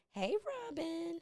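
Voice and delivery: voice cracking, very high. Greeting someone in the comments while drinking wine on her show, voice cracking. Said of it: "my voice is cracking".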